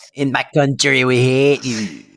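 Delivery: put-on, fake, mock French accent. Playing a French character teasing an English girl: mock French accent. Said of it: "Oh, a little English girl".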